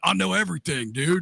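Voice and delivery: put-on gruff man's voice. Imagining the voice changed to a man's, the speaker answers in a gruff dude voice. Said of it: "like a gruff dude's voice".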